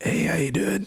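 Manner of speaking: deliberately bad voice. Showing how own voice sounded earlier today: imitating own terrible-sounding earlier voice. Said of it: "I sounded like this earlier t-, today".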